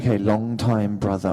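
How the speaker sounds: put-on English accent, attempted. Retelling first trying out a line after asking for accent help, attempted English accent. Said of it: "help me with an English accent".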